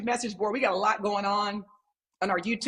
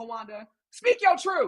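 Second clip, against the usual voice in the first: plain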